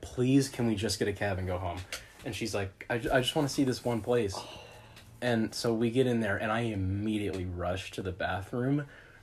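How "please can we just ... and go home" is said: acted, pleading, begging tone. Recalling needing the bathroom badly while out with her: retelling begging. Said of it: "I'm begging".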